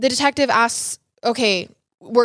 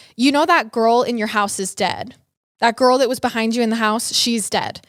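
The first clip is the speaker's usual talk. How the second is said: usual speaking voice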